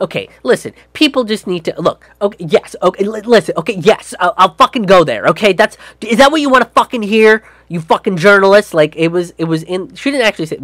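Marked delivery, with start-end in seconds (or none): 0.0-8.7 put-on defensive manner. Retelling how a woman answered a journalist's question: mock-defensive. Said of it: "gets real defensive".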